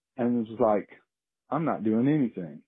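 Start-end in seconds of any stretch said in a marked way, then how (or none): 1.5-2.5 mock nonchalant, unbothered bear voice. Retelling how a bear in the trash reacted: imitating a nonchalant bear. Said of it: "looked over at me very nonchalantly".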